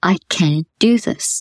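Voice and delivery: kind, tender, gentle voice, very slow pace. Showing how to practice the phrase in front of a mirror, soft gentle voice. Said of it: "Nice, gentle voice".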